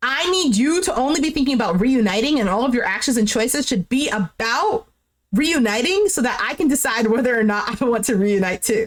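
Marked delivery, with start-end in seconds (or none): none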